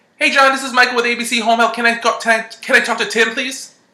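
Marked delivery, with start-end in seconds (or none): 1.8-3.7 pitch rising upward on please. Demonstrating how an inexperienced caller asks for someone: rising pitch on please. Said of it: "It goes up".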